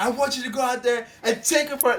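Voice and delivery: high-pitched, screaming rant. Retelling a coach screaming at his fighter between rounds, retelling a coach screaming. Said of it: "he's literally screaming at Neo".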